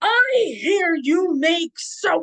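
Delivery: booming knight bellow. Retelling what a big fighter said on coming up to the speaker, booming voice. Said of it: "booming voice".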